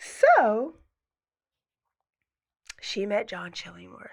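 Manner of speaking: quiet theatrical whisper. Talking with another speaker about who someone met, half-whispering. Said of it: "I'm whispering like you".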